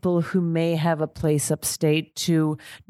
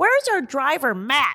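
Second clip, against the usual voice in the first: very loud, high, blurted out; 8 semitones higher than usual. Telling a story about walking down Main Street, the speaker imitates their son speaking loudly. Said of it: "my son very loudly goes".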